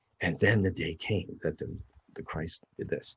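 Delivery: soft whispered reading, as if to oneself. Showing how to read a Bible passage to yourself: whispering. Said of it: "read it in a whisper town, sound like".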